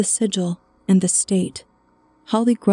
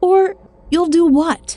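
very high-pitched, shrill, loud snapping retort; 9 semitones higher, 5 dB louder than usual. She answers the man who told her to watch it: snapping. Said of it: "she snapped".

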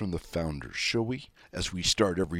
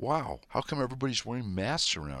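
guileless, innocent, wondering, questioning tone; 4 semitones higher, 4 dB quieter than usual. Retelling a question asked of a woman nearby, in a mock-innocent questioning voice. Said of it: "in a very innocent and questioning voice".

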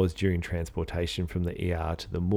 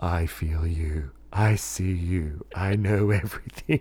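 deep, deliberate, slow, drawn-out phrasing. Retelling morgue workers speaking over the church intercom: slow, low voice. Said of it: "pronounce phrases in a slow, low voice like".

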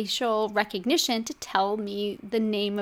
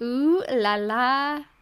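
slow, sarcastic, mock-sultry sexy voice. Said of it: "I'm being sarcastic about this topic being sexy".

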